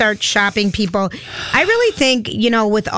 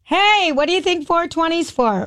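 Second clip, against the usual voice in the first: high, mild mock yell called out. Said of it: "and I scream at a stoplight".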